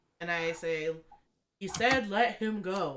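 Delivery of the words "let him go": big booming voice, much slower. In a role-playing game, a character demands that Mitch be released, booming voice. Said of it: "Booming voice".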